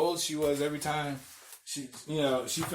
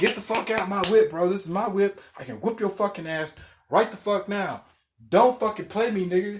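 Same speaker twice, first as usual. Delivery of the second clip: enraged, furious all-out screaming, loud and high; 5 semitones higher, 5 dB louder than usual. Retelling a confrontation with a man in their car, retelling screaming at him.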